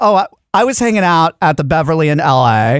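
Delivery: slow, laid-back Los Angeles accent. Showing how you're supposed to say l a: la way of talking. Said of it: "You're supposed to say".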